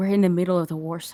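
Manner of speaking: hushed whisper under breath. Telling Edie in character that they are in the war zone: whispering under breath. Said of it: "I'm gonna whisper under my breath".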